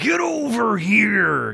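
very high wrestler voice, swooping, "here" stretched out. Recalling his go-to fighting-game character's catchphrase, sounding like Hulk Hogan. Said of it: "Why'd you sound like Hulk Hogan".

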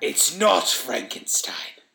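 growled, grudging tone in a growling creature voice. Answering a question about what it is building, a creature replies, growling. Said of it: "it growled".

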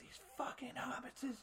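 frantic, freaked-out whisper. Joking about Lord of the Rings lines, frantic Gollum impression. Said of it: "when Schmeagle was freaking out".

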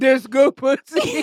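crude, blunt caveman voice in broken English. Acting out what a partner would say in bed: imitating a caveman. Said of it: "Like a fucking caveman".

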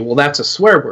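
usual speaking voice

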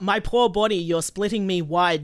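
ordinary delivery

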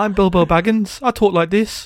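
put-on silly, goofy Brummie accent, laid on. Remembering a dad reading The Hobbit aloud, doing stupid Brummie-accent Bilbo Baggins. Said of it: "a really stupid brumming accent".

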